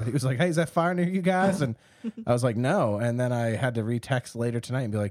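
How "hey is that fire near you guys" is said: fake Southern accent, much higher. Quoting an uncle's text asking about the fire, in a put-on southern accent. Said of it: "I just gave him a southern accent".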